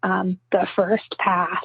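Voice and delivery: guttural, growling ghostly spirit voice. Retelling a voice heard on a recording but not in the room; imitating a growly disembodied voice. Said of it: "and it's really growly".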